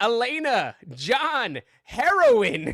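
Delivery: wild, shrill, very high shrieking scream. Reading aloud a trip account, retelling rolling on the ground: retelling a scream. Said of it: "while screaming".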